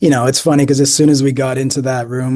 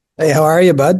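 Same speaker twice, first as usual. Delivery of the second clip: textbook, classic Canadian-style accent; 3 semitones higher than usual. Repeating a greeting on request: classic Canadian greeting. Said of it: "Could you hit us with it one more time?".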